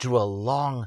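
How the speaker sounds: plain reading voice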